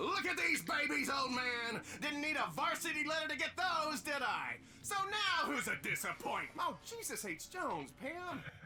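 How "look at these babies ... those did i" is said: high-pitched, shouted, taunting scream. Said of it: "and scream".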